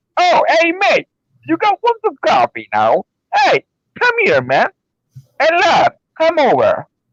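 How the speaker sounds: casual, unhurried, put-on British accent, sing-song, slow. Showing another speaker that they can sound British: British accent. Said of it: "What do you mean you and me not sound like British?".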